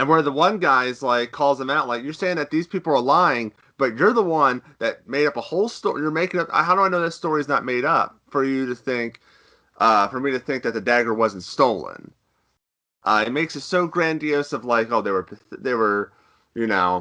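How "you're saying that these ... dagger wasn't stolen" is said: plain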